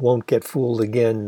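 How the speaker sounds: ordinary delivery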